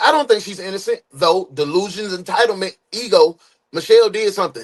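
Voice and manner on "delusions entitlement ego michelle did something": ordinary talk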